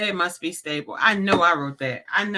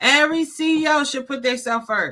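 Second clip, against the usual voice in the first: emphatic, high, pitched-up yell; 8 semitones higher, 5 dB louder than usual. Recording a show episode addressed to CEOs, yelling. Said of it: "I'm yelling because it's important".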